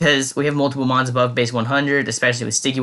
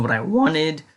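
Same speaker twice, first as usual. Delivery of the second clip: voice cracks on the word "wanted"; 3 semitones higher than usual. Speaker talking about their Copperajah, voice cracking. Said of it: "my voice cracked there".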